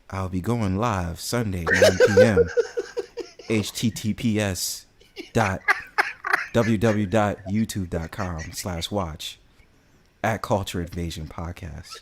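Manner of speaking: halting, very slow, deep, drawn-out reading voice. Showing how he'll read a random comment, very slow, deep reading voice. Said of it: "reading her comment like really slow and having a more of a deeper voice".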